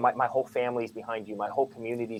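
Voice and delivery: hushed, secretive, confiding tone. Retelling what people coming up to him would half-whisper; imitating a half-whisper. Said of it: "They'd be whispering in my ears".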